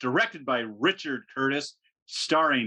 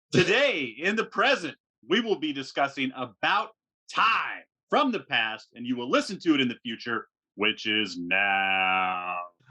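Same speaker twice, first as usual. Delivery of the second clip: drawn-out radio announcer voice, on-air host delivery. Host opening the discussion of about time, in a radio voice. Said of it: "I like that new radio voice".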